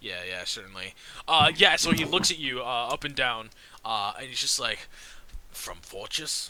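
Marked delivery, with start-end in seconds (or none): 5.5-6.5 suspicious, wary dwarf voice. Voicing a dwarf guard looking a visitor up and down: voicing a dwarf guard. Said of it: "he's a dwarf".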